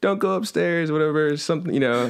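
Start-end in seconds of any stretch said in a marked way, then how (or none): 0.0-0.9 acted high-pitched, shouted call. Retelling a show scene where the mom calls out, imitating someone yelling. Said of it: "and then she just yells".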